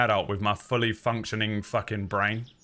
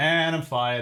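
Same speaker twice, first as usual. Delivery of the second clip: normal talking voice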